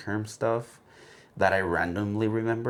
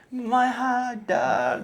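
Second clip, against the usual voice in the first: play-acted, very high, blubbering, wailing child-like ugly cry; 4 dB louder than usual. A parent retelling the child's reaction after falling asleep, imitating a child crying. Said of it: "I'm talking like like crying".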